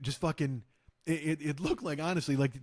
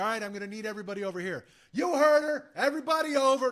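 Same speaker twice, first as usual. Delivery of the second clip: bossy, pitched-up, domineering voice; 8 semitones higher, 4 dB louder than usual. Retelling how an extra took control of the set: imitating a bossy self-appointed ad. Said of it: "the A D would be like".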